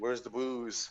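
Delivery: pathetic, utterly pitiful delivery. Quoting a movie scene after being robbed: imitating Jeff Daniels, pathetic. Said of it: "Jeff Daniels is sitting there all, like, pathetic".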